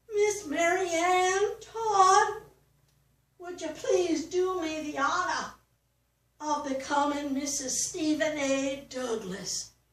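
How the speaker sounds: very shaky, quavering, trembling, unsteady acted pleading voice. Recalling how Stephen A. Douglas proposed to her, imitating his very shaky voice. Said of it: "he said in a very shaky voice".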